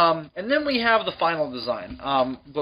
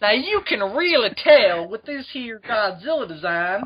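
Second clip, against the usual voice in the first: pitched-up, high cook woman voice; 7 semitones higher than usual. Teasing another speaker by imitating how they sounded: Paula Deen voice. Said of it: "She just sounded like Paula Deen".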